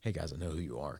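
very quiet, low, soft, hushed voice. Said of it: "I said it very quietly".

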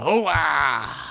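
high, blurted exclamation. Imagining Al Pacino staying in character on set: Al Pacino impression. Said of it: "Pacino staying in character, wandering around blindly".

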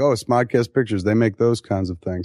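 ordinary delivery

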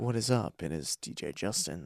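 soft ASMR half-whisper, very quiet and very low. Introducing a pretend ASMR episode as DJ Justin, ASMR-style half-whisper. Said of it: "we are back for another ASMR".

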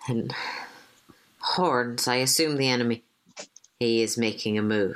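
speaking quietly. Speaking in character to Aiden as an attack comes: speaking quietly. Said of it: "then quietly to Aiden".

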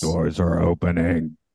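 creepy mechanical robotic announcer voice. Talking about trains in japan, speaker mimics the announcement in a creepy robot voice. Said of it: "still had the creepy robot voice on the train".

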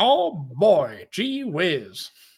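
put-on old-timey 1940s newsreel voice. Hyping a player called Tommy Terrific, in an old-timey 1940s voice. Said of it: "like a 1940s press conference".

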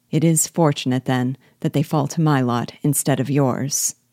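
plain

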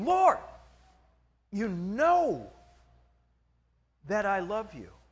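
mildly upset and frustrated, swooping pitch, know drawn out. Retelling the scene where Peter is asked again if he loves him, a little upset. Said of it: "Peter is starting to get a little upset".

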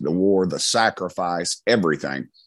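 ordinary talk, nothing marked

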